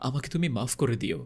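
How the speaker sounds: ordinary delivery, nothing marked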